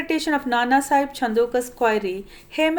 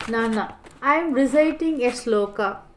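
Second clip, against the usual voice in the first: ordinary delivery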